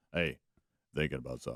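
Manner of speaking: very low, deep, commanding, authoritative boss voice. Retelling what a coworker said, imitating a deep, authoritative voice. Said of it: "his deep, authoritative voice".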